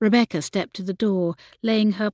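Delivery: ordinary delivery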